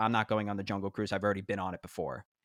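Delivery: normal talking voice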